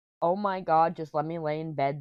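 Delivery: ordinary delivery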